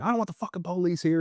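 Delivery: acted, furious, high-pitched angry yell. Retelling what a man holding a gun at the door yelled: retelling a yell. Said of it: "he's yells".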